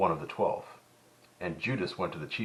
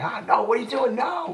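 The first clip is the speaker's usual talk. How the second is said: very high-pitched, shrill, loud shouting outburst; 8 dB louder than usual. Retelling how a viewer reacts while watching: imitating Keith yelling at the screen. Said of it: "Apparently Keith yells at the T V".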